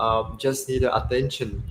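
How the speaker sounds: ordinary talk, nothing marked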